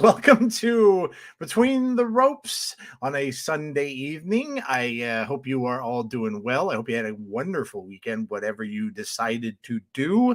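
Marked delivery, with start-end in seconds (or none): 0.0-4.6 higher-pitched vampire count accent. Host opening the Sunday show Between the Ropes, in the Count from Sesame Street voice. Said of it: "the Count on Sesame Street voice".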